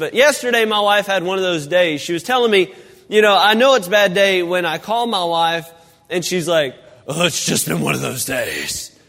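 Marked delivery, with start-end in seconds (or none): 7.1-8.9 deep, creaky, rough, rasping demonic voice. Retelling how his wife answers when he calls on a bad day, in a demonic voice. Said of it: "she says it in a demonic voice".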